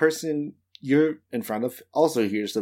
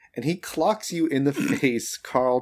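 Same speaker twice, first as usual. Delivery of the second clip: ordinary talk, nothing marked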